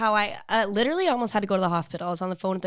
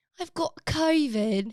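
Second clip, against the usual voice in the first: put-on British accent, pitched up; 6 semitones higher than usual. Trying out accents on the same phrase, doing a British accent. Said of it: "now do like British".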